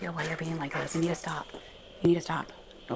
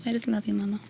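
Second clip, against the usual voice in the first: higher-pitched voice speaking as a dog; 4 semitones higher than usual. Voicing what the dog is saying: voicing the dog. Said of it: "She's like".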